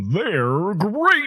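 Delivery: very high, way up cartoon tiger mascot voice. Asked for their best Tony the Tiger impression, the speaker does theirs. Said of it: "I'll do mine".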